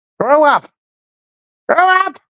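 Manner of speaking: strange, off-kilter, high-pitched put-on voice. Repeating the critic's line in his weird voice: imitating a weird voice. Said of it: "He's got a weird voice".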